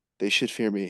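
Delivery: weak, feeble voice with no power. Joking to a friend about how a screen character sounds, putting on a mock weak voice. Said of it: "And then he gets angry".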